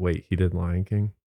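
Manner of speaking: normal talking voice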